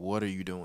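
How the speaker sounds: mild, half-yelled, exasperated shouted outburst. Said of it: "literally screaming at my television".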